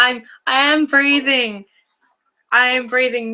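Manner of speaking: nervous. Starting a live stream and settling in, nervous. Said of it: "I'm just so nervous".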